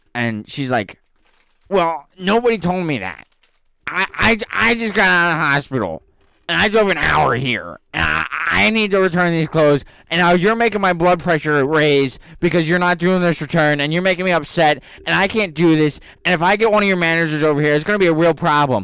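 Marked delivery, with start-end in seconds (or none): 1.6-18.8 put-on panicked hyperventilating voice, higher and louder. Retelling a customer who refuses to accept a denied return, imitating someone hyperventilating. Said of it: "they see that she's, like, hyperventilating".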